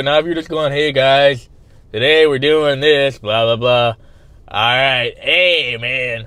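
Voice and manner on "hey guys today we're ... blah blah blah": flat, low-energy droning vlogger voice, zero enthusiasm. Mocking a vlogger who opens a video with no energy: imitating a vlogger with no energy. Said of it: "You gotta put some energy into it".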